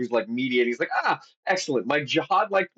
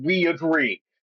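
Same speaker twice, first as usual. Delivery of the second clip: put-on eager, sudden, mild yell; 4 semitones higher than usual. Retelling how a prince jumped up at the negotiations: imitating a scream. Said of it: "jumps up and screams".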